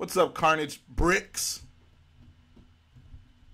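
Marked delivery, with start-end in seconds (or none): 0.0-1.6 bricks hit slow and loud. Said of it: "Emphasis on the bricks".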